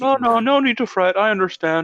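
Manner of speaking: very high, loud comic voice. Voicing a manga character who tells another not to fret: Randy Marsh voice. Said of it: "Like a Randy Marsh".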